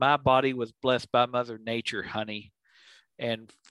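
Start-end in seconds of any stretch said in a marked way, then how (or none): none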